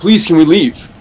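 loud, desperate, violently urgent pleading tone. Retelling a visiting monk asking his guide to leave: imitating urgent pleading. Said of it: "with this violent urgency".

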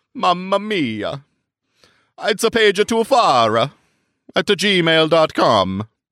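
put-on Italian accent. Plugging the podcast's email address, in a fake Italian accent. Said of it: "I'm not Italian".

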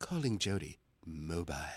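very low, soft, hushed British female phone voice. Retelling how the phone assistant answers: imitating British female phone voice. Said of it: "I've got the British female voice".

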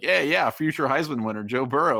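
put-on, wry, teasing, tongue-in-cheek delivery. Retelling what a co-host once said about a recruit guest, mock tongue-in-cheek. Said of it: "kind of tongue in cheek said like".

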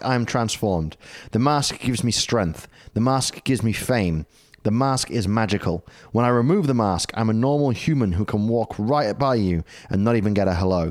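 ordinary talk

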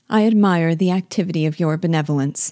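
ordinary delivery

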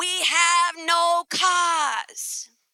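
put-on New York clerk-style accent. Retelling what the rental car place staff said, in New York accent. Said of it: "they start in their New York accent".

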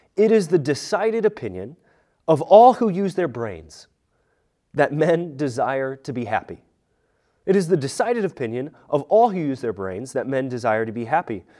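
ordinary talk, nothing marked

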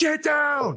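shrill, very high shrieking screech. Flinging to the ground for cover from dragons, a character warns others, shrieking. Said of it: "just am shrieking like".

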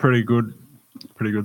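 talking with full mouth. A podcast co-host answers the host's greeting while talking with a mouthful of ice. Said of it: "I just decided to take a mouthful of ice".

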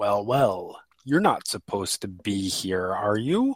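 deep, almost hollow, drawn-out voice. The narrator voices a figure who pauses and looks at the players: deep, almost hollow voice. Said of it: "says in sort of this deep, almost hollow sort of voice".

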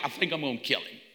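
put-on breezy, casual, offhand tone. Retelling a scripture story, imitating God speaking in a casual tone. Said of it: "God's just casually like".

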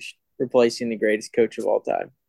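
usual speaking voice

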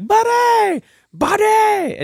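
shrill, high, stretched-out, drawn-out yelling. Describing a movie character calling for a kid, imitating Hans yelling. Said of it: "he just yells out Buddy".

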